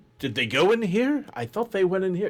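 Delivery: put-on woman's voice, high pitched. A game narrator describes voices behind a door, voicing a woman. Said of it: "One seems to be a female going".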